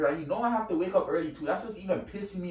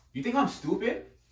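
pitched-up delivery; 6 semitones higher than usual. In an argument about going out at 3 a.m., yelling. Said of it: "don't yell at me".

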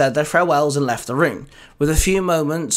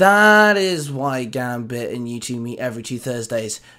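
plain

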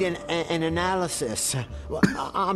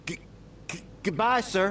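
halting, nervous, stammering voice; 2 semitones higher than usual. Saying goodbye to a visitor: nervous stuttering. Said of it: "stuttering like a crackhead".

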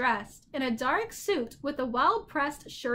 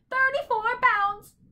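shrill, very high screech; 10 semitones higher, 4 dB louder than usual. Reading a story aloud, the bird's parting line as it flies off: shrieked. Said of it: "Shrieked the bird".

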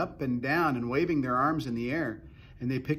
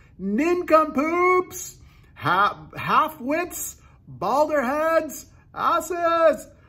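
very high, very loud, very slow, shrill, drawn-out hollering; 8 dB louder than usual. Narrator reads a character yelling up at the cloud men: yelling as loud as possible. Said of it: "he yelled".

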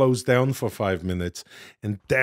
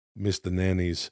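ordinary talk

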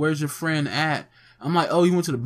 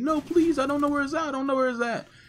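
play-acted crying and pleading, very high, tearful; 11 semitones higher than usual. Retelling how a guy begged when threatened over a phone: imitating someone crying and pleading. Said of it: "just crying, pleading".

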